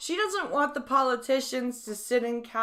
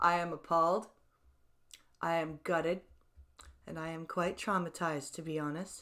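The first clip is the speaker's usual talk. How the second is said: perfectly composed, unruffled, very calm, soft delivery; 7 semitones lower, 7 dB quieter than usual. Teasing someone by showing how a traumatized person says it, mock-calm. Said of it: "they sit there very calmly and they say".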